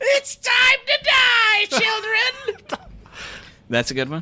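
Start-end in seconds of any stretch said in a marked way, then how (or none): 0.1-2.8 very high, very slow, sinister, creepy clown voice. Asked for a creepy clown line, the speaker performs one: creepy clown voice. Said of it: "what's my creepy clown impression?".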